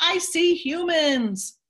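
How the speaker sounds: put-on high, excited little-kid voice, about seven years old. Retelling a boy spotting a boat through a telescope: imitating Zachary's excited exclaim. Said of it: "he exclaims in his little seven-year-old voice".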